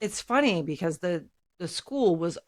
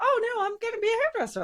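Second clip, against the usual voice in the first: acted, all-bubbly, very high-pitched chirpy voice. Retelling answering a guidance counselor: imitating own bubbly past self. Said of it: "I'm all bubbly".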